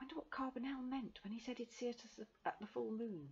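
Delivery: secretive, hushed half-whisper. Flopped into the back seat, she speaks to the boy beside her, half-whispering. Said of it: "she whispered to John".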